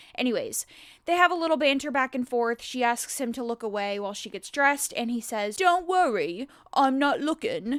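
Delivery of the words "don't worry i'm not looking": slow, very fake-sounding put-on British accent. Retelling a scene and quoting what he says to her, fake British accent. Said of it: "in his fake, actually British accent".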